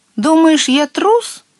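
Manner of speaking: shrill, very high-pitched shout. The little water sprite shouts back at his frightened friend, shouting. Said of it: "крикнул маленький водяной".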